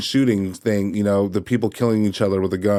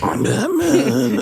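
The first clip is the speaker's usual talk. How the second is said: put-on choked voice, much higher. Mocking a man whose cowl is too tight, quoting him: mock-choked Batman voice. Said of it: "he has like a weird voice because it's literally choking him out".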